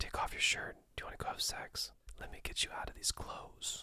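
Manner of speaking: breathy, hushed, barely voiced whisper. Acting out the guy who whispers it: whispering. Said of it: "my final tip on this front is to not whisper it. Don't be this guy".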